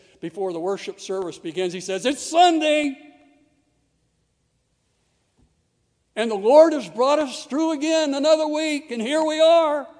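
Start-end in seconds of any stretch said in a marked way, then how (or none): 2.1-9.8 exuberant, excited, loud and high-pitched voice. Quote the pastor speaking before the worship service begins, imitating Jeremiah Thomas's exuberance. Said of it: "he says it with that exuberance".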